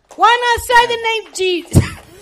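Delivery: shrill, high, loud, full-throated shout. Preaching to listeners about faith and naming jesus, yelling. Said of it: "I yelled".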